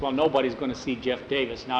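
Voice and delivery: plain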